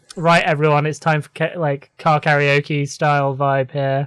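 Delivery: normal talking voice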